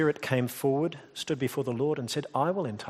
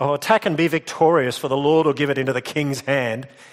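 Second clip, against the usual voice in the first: mock, very loud, booming voice dripping with sarcasm; 8 dB louder than usual. Retelling an answer to the king's question about war: imitating a sarcastic reply. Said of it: "he's being sarcastic".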